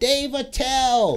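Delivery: put-on woman's yell. Retelling a woman heckling an opening act: imitating a woman yelling. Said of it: "some lady started yelling".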